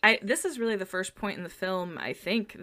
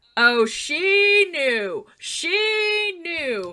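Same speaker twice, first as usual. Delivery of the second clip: high, slow, drawn-out, knowing put-on voice. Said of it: "Patricia started going".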